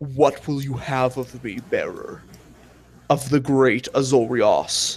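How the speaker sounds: deep, throaty, guttural, lizard-like dragon voice. Narrator voices a dragon speaking into a listener's mind, deep guttural dragon voice. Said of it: "deep and guttural, very lizard-like".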